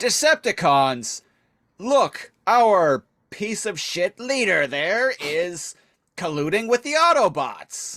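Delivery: worked-up, pissed-off call, high and slow. Retelling the scene where Starscream turns on his leader: angry Starscream impression. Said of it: "Starscream gets all pissed about this".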